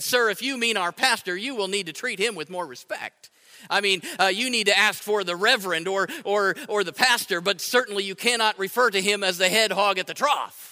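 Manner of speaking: usual speaking voice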